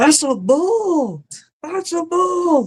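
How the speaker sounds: mock shrill very high scream, bull stretched out. Retelling a friend running back from a bull in the dark: imitating someone screaming.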